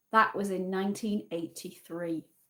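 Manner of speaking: put-on hushed, softly spoken elderly woman's voice. Voicing an elderly woman guest's follow-up remark, quietly. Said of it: "Then quietly".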